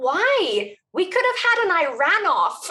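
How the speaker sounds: put-on "why" stretched out in a Liverpool accent. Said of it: "with his Liverpudlian accent".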